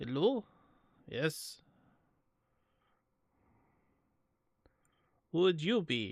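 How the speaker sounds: put-on stern, serious Russian accent. Voicing a drifting soldier hailed from a ship, Ivan's deeper Russian accent. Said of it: "his accent is more like this, but deeper".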